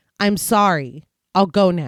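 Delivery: slow, flat, toneless, expressionless voice. A figure on the stairs stops and speaks, flat, emotionless voice. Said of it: "speaking in a flat, emotionless voice".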